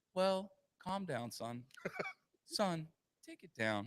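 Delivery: easygoing, unbothered tone. Retelling how a dad answers his screaming son: imitating a nonchalant calm tone. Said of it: "he's just nonchalantly like".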